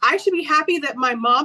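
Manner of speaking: put-on crying voice.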